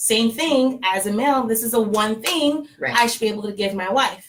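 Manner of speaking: ordinary talk, nothing marked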